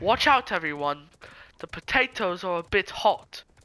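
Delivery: loud put-on British accent. Retelling a man spitting out hot potatoes, impression of the man's accent. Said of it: "Was that a good impression".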